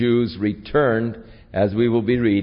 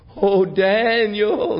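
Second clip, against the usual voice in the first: acted, very high, drawn-out, mournful lamenting wail; 10 semitones higher than usual. Storyteller retelling the king calling out to daniel, retelling a lamentable cry. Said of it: "he cried in a lamentable voice".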